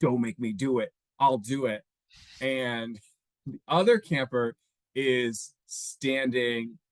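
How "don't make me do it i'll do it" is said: mild, restrained half-shout, acted out. Speaker recounts what a camper on a stage shouted: retelling a camper shouting. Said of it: "he's shouting like".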